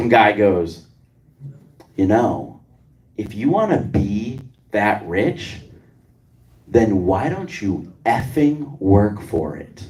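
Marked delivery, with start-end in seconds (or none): 2.0-9.9 smug heckling voice, low drawl. On stage, retelling what a guy at the back of the room said; mimicking a smug voice. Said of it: "in the most smug voice I've ever heard in my life".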